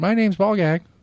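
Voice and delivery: put-on very high, shrill, shrieking scream. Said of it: "just screaming at the street".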